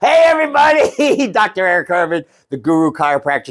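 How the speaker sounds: talking through slight chuckling laughter. A chiropractor opening a video after some bloopers: laughing a little while talking. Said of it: "I'm laughing a little bit".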